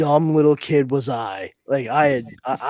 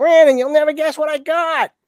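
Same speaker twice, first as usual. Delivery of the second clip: put-on loud, very high, goofy New England accent; 14 semitones higher, 5 dB louder than usual. Retelling how Derek brought the tape home, imitating Derek, goofy New England accent. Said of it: "goofy New England kid".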